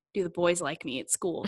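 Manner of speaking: ordinary talk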